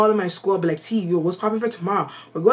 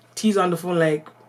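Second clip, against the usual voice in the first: plain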